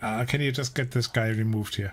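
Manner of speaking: ordinary talk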